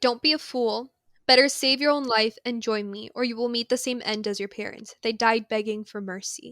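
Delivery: ordinary delivery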